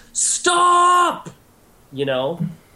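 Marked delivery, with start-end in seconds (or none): 0.2-1.3 very high, urgent shout. Voicing a character halting a street brawl: shouting to stop a brawl. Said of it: "a sound of her, like, making a".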